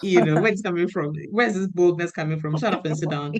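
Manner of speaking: ordinary talk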